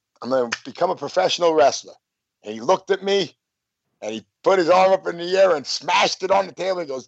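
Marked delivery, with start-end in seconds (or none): none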